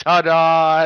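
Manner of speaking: top-of-the-lungs drawn-out yell at full volume. Retelling a brother jumping through the front door: imitating a yell at the top of his voice. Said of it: "at the top of his voice".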